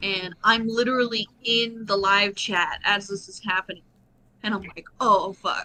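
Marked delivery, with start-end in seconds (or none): 5.0-5.7 put-on nervous outburst, louder. Retelling a moment in a live chat: imitating own nervous reaction. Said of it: "and I got real nervous".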